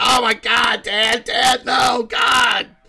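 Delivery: play-acted freaked-out, horrified, very high, slow, drawn-out. Retelling a daughter's reaction to her dad's joke: imitating a daughter freaking out. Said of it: "she was freaking out".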